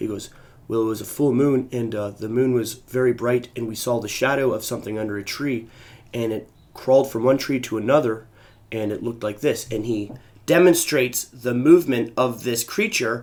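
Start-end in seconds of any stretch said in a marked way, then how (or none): 0.7-9.7 level, grave, solemn, flat monotone voice. Retelling a friend's story of a night in a park: imitating a friend's solemn monotone. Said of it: "a solemn, monotone type of voice".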